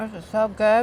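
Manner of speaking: talking with mouth full. Tasting the snack from today's recipe, talking with a mouth full of food. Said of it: "can barely talk here with all this food in my mouth".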